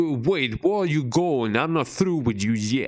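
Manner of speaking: put-on New York accent. Trying out a put-on voice for fun: new york accent. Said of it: "I'm trying to do a, a New York accent".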